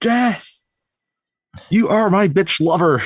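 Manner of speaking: put-on high, called-out yelling. Retelling a scene where the son Todd yells out: imitating Todd yelling. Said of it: "Todd just yells out".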